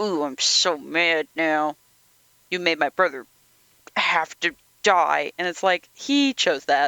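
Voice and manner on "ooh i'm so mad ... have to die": mock gritted-teeth voice, slower. Retelling a scene, the speaker acts out Dom's line: imitating Dom gritting teeth. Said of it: "the way he kind of like grits his teeth".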